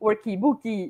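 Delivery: put-on very Portuguese accent, Portuguese vowels tacked onto workbook. Telling how Sam recorded an English word, imitating Sam's Portuguese accent. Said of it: "she was going like very Portuguese".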